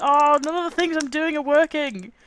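really angry grumbling. Losing to a calm opponent, the speaker vents, really angry. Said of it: "You sound really angry".

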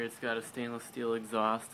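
ordinary delivery

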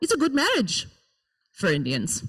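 put-on Indian accent with swooping pitch. Reading aloud a mother's answer about arranged marriage: parent's indian accent. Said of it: "speaking in the accents of my parents".

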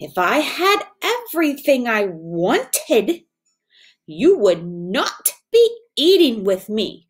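curt, sharp, snapping voice. A princess answers a frog eating with her, a sharp retort. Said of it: "the princess retorted sharply".

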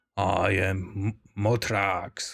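dragon voice dropped to the deepest, lowest register. Narrating a story, the ancient dragon introduces itself: very deep Motrax dragon voice. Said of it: "His voice is so deep".

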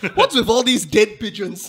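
put-on, high, loud, really mad woman voice. Imagining a wife who comes home to dead pigeons: imitating a really mad wife. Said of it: "his wife's really mad and she's like".

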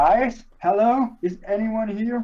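high, put-on fantasy dwarf voice. Game player describing an illusion making the owl shout, in a dwarf voice. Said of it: "Like, in a dwarf voice".

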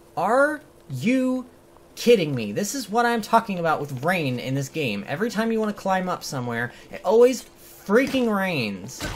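fed-up, angry outburst. Streamer reacting to rain starting again in the game, angry. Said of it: "I'm actually angry right now".

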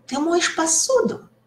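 high, loud rising pitch.

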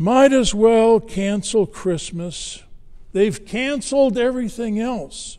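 put-on whiny, high-pitched, loud whining tone. Retelling a teenager's remark after criticizing her little sister, imitating a whine. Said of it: "she kind of whines".

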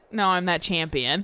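ordinary talk

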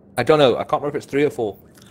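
words muffled by chewing, talking through mouthful. Answering a question mid-conversation, talking with a mouthful of food. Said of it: "I've got a mouthful of food".

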